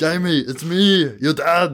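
put-on loud, giant-guy Austrian accent. Describing a movie, speaker quotes the dad talking to his son jamie, austrian accent. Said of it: "giant guy with an Austrian accent".

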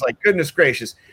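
ordinary talk

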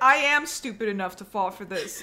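usual speaking voice

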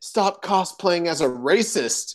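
mild, called-out jeering heckle. Retelling what a friend yelled at a cosplayer below: imitating someone yelling. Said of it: "yelled out to the dude".

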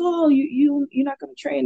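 put-on voice with a slight Portuguese accent. Retelling a professor greeting them at the gym: Professor Ricardo's Portuguese accent. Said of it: "in his little Portuguese accent".

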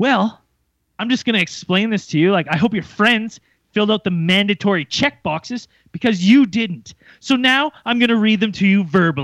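most arrogant, talking-down tone. Retelling what a guy said to him, mock-arrogant tone. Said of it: "with the most fucking arrogant attitude".

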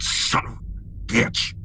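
muttered under breath. Retelling a man whose eggnog splashed his jacket, muttered under his breath. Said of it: "it's just kind of under his breath".

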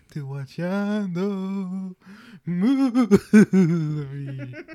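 slow, stretched-out, high, goofy cartoon voice.

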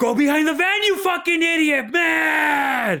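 very high, loud exasperated yell, "man" drawn out. Retelling a brother losing patience with a message: imitating someone yelling. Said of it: "fucking everybody hears".

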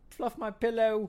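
high-pitched put-on female voice. Quoting her line to Surge at the end: put-on woman's voice. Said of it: "That was my woman voice".

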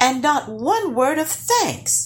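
startled, surprised outburst, very high pitch. Narrator voicing Lars in a story, a surprised exclamation. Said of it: "exclaimed Lars, surprised".

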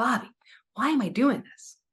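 tearful voice, crying while speaking. Retelling a past talk while crying: retelling own tearful words. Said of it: "I'm crying and I'm like".

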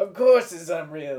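booming, very loud put-on New Jersey accent. Quoting the animated guy in an imagined comedy club: New Jersey accent. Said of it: "That was a good accent".

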